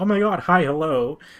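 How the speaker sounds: loud, drawn-out, overly happy, lively tone. Gamer describing how a character sounds now, imitating a happy voice. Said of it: "but now she's like so happy now".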